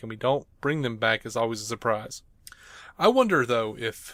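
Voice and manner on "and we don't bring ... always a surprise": normal talking voice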